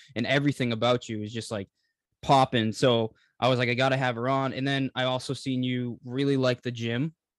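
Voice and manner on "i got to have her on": usual speaking voice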